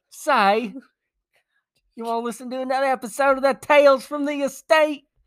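very high, botched, put-on Australian accent. Thanking listeners in Sweden and Australia, closing the episode: failed put-on Australian accent. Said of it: "That is not an Australian".

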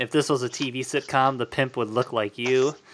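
ordinary talk

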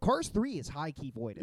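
normal talking voice

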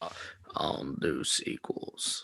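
put-on gruff movie star voice. Imitating a movie star refusing sequels: Vin Diesel impression. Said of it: "that was also good".

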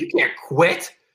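put-on angry outburst. Retelling how the loser reacted when the speaker quit a game, retelling an angry outburst. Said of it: "he was mad".

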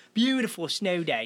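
mock English accent, imitated. Retelling how a woman said a line, in an English accent.

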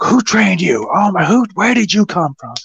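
play-acted very high, excited shout. Retelling what a man called out about you as a kid, imitating someone yelling. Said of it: "he's like yelling this out".

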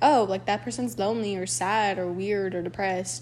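ordinary delivery

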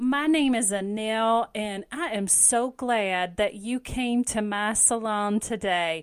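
very slow, laid-on, exaggerated Southern drawl. Asked to do a southern accent, playing a salon worker in exaggerated Southern accent. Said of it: "it's an exaggerated Southern accent".

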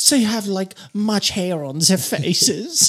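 put-on clumsy, failed Spanish accent. Voicing locals who have heard rumors of bearded strangers, in a bad Spanish accent. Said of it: "What fucking accent was that?".

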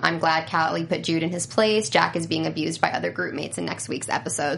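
normal talking voice

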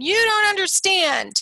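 high-pitched, hard yelling. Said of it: "my son is yelling at me".

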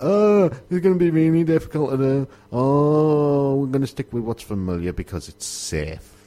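mock disgust, "oh" drawn out. Speaker recounts developers turning down his pitched idea: quoting developers with put-on disgust. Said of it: "you can hear the disgust in my voice".

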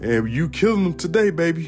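sarcastic, mocking tone. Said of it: "the hint of sarcasm in our voices".

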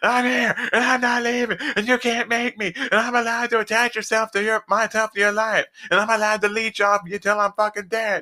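high-pitched, petulant, acted-out full-on tantrum rant. Mocking how the person addressed really sounds, in a mock tantrum voice. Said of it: "throwing one of these fucking tantrums like".

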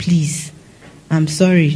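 acted-out, put-on pleading tone. A speaker in labor recalls what she said to the nurses, retelling her pleading. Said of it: "I started pleading the nurses".

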